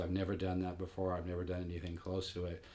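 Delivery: ordinary delivery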